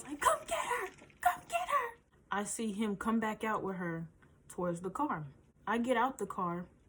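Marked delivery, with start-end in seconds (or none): 0.2-2.0 shrill, very high-pitched screaming cry. Retelling calling a man to come get her, acting out a scream. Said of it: "What the fuck am I screaming for?".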